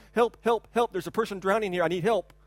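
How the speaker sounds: normal talking voice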